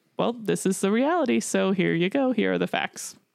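put-on matter-of-fact delivery. Retelling a character's reply to a surgeon: imitating matter-of-fact delivery. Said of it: "kind of says it like a matter of fact".

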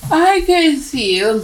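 spoken through a yawn. Speaker starts a take, then restarts it, while yawning. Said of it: "that was a yawn".

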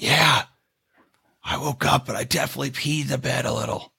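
soft, hushed whisper under the breath. Retelling what a friend said on waking up, imitating a whisper. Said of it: "He's whispering".

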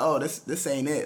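plain

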